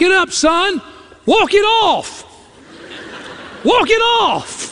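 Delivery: very high, slow, unhurried, urging tone. Retelling being hurt on the ball field, imitating Dad's voice. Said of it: "I can hear my dad's voice".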